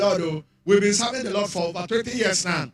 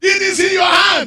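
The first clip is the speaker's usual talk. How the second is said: piercing, very high, very loud, shrill yell; 10 semitones higher, 10 dB louder than usual. Telling a story about an auntie in a kitchen, retelling an auntie's shout. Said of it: "The auntie shout".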